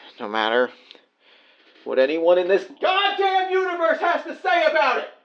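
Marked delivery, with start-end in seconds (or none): 2.8-5.1 high yell, swinging and building, climbing upward. Calling to say you'll be home soon, yelling. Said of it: "I didn't mean to yell".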